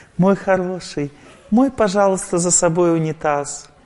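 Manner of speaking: affectionate, kindly, soft and tender coaxing tone. Showing how to ask someone kindly, in a gentle, tender tone. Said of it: "По-доброму, ласково, добро, по-доброму, нежно".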